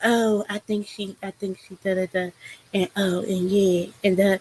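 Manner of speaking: hushed half-whisper under the breath. Retelling what Jaguar half-whispered to her in the background: imitating Jaguar half-whispering. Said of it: "whispering to her".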